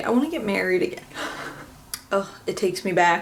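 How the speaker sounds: soft voice on the verge of tears. Video host smelling something not smelled since the wedding; about to cry. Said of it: "I'm gonna cry".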